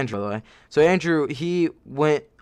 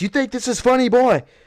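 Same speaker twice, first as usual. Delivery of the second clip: put-on, shrill, very high, aggressive screaming voice; 10 semitones higher, 3 dB louder than usual. Telling how a teacher screamed at a boy doing push-ups, imitating Miss Fisher screaming. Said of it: "Miss Fisher was screaming in his face".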